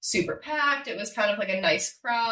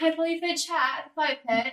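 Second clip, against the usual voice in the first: playful, pitched-up fake British accent; 6 semitones higher than usual. Retelling making little videos with the producers: imitating a British accent. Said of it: "doing little videos with the producers in British accents".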